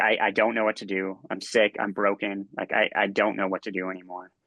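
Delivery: desperate, pleading, begging tone. Retelling begging his wife on the garage floor: retelling own pleading. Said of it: "I plead with her".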